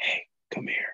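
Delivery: quiet, breathy whisper. Retelling calling over customers in line: imitating a whisper. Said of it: "just whisper to random customers".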